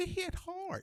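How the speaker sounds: very high, soft impression voice. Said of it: "Roy Jones said".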